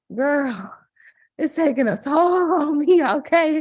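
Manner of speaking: winded and breathless. Answering another speaker about sounding out of breath: out of breath. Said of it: "you sound winded".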